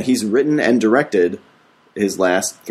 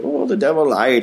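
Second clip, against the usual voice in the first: poor fake Irish accent, pitched up; 5 semitones higher than usual. Mimicking an irish actor talking about the devil, in a bad irish accent. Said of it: "He's all Irish".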